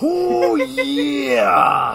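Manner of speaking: put-on, very high, loud, throat-straining holler. Joking about a favorite wrestler's movie cameo: throat-straining Macho Man yell. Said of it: "I'm gonna hurt my throat".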